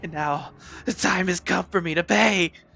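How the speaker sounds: forceful delivery. Showing how a character's line should be delivered; aggressive. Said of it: "it needs to be more like aggressive".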